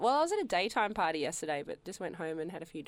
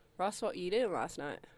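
plain

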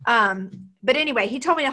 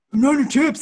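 slow, loud speech with mouth full. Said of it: "his mouth is obviously full of chips".

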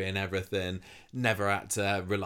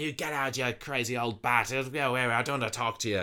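mock bitter, vile snarl; 5 semitones higher than usual. Recounting a scene where a bitter man turns on an old woman: retelling a bitter snarl. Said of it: "he kind of snarls at her".

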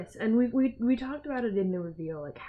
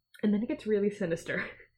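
usual speaking voice

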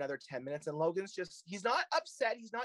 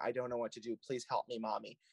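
put-on mimicked childlike crying, lower; 6 semitones lower than usual. Retelling what she said crying on the phone to her mother, imitating childlike crying. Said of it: "she was crying, and it was such a childlike".

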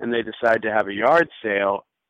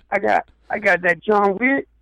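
high, pushy street dealer voice. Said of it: "it's an unsavory element".

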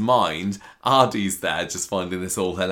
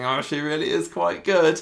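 forced niceness through clenched teeth, pitched higher; 8 semitones higher than usual. Retelling a character praising a rival: imitating speaking through gritted teeth. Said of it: "smiling through gritted teeth and saying".

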